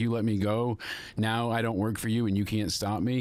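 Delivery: ordinary talk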